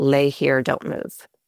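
put-on flat monotone voice. Recalling the doctor's words during the experience, imitating her monotone voice. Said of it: "her monotone voice said".

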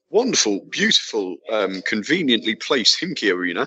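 ironic gushing laid on thick, swooping, sarcastic. Recalling an earlier trip to the stadium: sarcastic. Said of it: "no hint of sarcasm in my voice".

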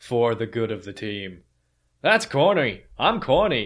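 loud, improvised put-on New Zealand accent. Quoting a straight-shooter kind of guy from a clip shared on Twitter, in a put-on New Zealand accent. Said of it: "With an actual New Zealand accent".

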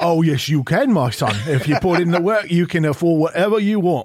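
put-on British gangster voice and accent. Playing a dad answering his son about buying drums, in a British gangster accent. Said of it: "you sound like a British gangster".

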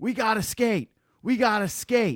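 very high, drawn-out, pleading scream. Retelling a coach screaming at his team from the bench: imitating Sheldon Keefe screaming. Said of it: "Sheldon Keefe on the bench during the Golden Knights game screaming".

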